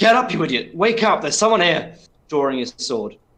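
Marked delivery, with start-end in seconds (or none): 0.0-2.0 loud, high-pitched hollered shout. Voicing the second bandit in the story, calling to his downed comrade, shouting. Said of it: "just shouts".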